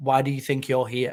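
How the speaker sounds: mock flat deadpan delivery. Retelling what he asked a player who arrived without his girlfriend, retelling a deadpan question. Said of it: "Like deadpan".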